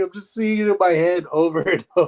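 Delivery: talking while still cracking up, laughing through words. Recalling a funny clip with friends: laughing while talking. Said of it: "I can't stop laughing".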